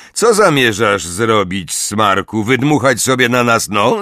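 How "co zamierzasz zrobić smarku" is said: ordinary delivery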